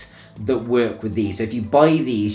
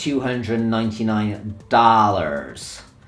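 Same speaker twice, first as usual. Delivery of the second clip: fake, put-on American accent. Giving the price of DJ decks in America: American accent. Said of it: "That's my American accent, by the way".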